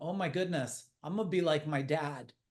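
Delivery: imitated sobbing. Retelling breaking down while putting a rocking chair together: retelling own past crying. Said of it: "breaking down crying and going".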